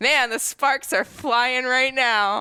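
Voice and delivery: shouting with excitement, high-pitched. Asking the other speaker whether Jeff will react, shouting with excitement. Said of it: "I'm shouting because I'm excited".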